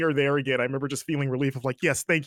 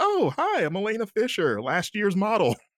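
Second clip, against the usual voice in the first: put-on, very sarcastic, spiteful, swooping, high-pitched tone; 6 semitones higher than usual. Recalling a game scene where Elena meets Chloe, retelling Elena Fisher's sarcasm. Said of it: "she just really sarcastically is like".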